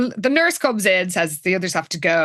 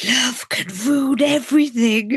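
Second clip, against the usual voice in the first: mock dramatic whisper, higher; 5 semitones higher than usual. Recapping a story, acting out a character's line as a mock dramatic whisper. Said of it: "she whispers".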